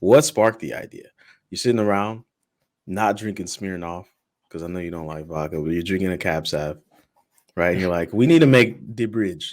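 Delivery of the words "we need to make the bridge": put-on Jamaican accent. Host imagines guest Alex sparking the idea, voicing him in a Jamaican accent. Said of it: "I'm gonna keep with the Jamaican accent".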